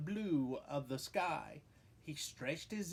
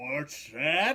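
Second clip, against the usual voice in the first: deep, loud, terribly gruff growling bear voice; 5 semitones lower, 7 dB louder than usual. Reading a story where a bear answers the rabbit, in a gruff growl. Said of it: "growled a voice that was terribly gruff".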